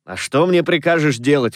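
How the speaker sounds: ordinary delivery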